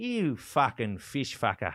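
put-on, drawn-out, swooping Australian accent. Retelling what an Aussie man said to your friend John, imitating Australian accent. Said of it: "even as I'm doing this Australian accent".

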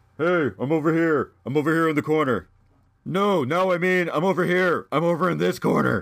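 thrown voice as if from across the room. Acting out a ventriloquist from comic-book ads: ventriloquist throwing their voice. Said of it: "throwing their voice".

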